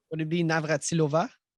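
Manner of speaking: put-on French accent. Quiz contestant answering a trivia question, in a put-on french accent. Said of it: "you put a French accent to it".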